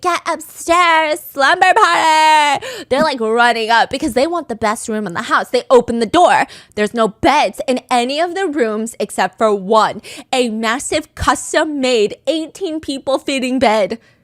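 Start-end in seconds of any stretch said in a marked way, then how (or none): 0.0-2.7 high, drawn-out, stretched screaming call. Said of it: "Tila is screaming".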